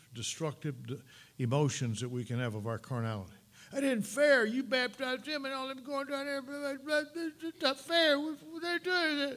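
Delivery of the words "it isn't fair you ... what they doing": very high, upset, bent-out-of-shape grumbling. Acting out followers complaining that it isn't fair: imitating upset complaining. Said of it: "they're a little bent out of shape and upset".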